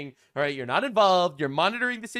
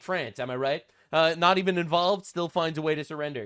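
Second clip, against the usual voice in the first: ordinary talk, nothing marked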